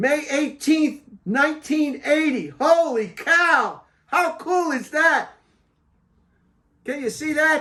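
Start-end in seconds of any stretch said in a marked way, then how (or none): 2.6-7.6 loud, thrilled, excited yell full of wonder. Looking at Mount Saint Helens ash from 1980, yelling excitedly. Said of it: "I'm sorry, I'm yelling".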